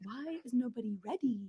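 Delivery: very quiet, demanding, authoritative tone. Describing a brand's tone of voice, imitating Miranda Priestly. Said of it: "she's like".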